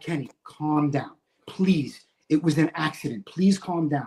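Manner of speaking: put-on pleading voice. Retelling the new guys begging him to calm down: imitating a pleading plea. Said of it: "And they're like".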